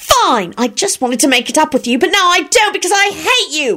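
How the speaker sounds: very high, piercing, shrill screech. Narrator reading Rosie's line to William, screeching. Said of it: "she screeched".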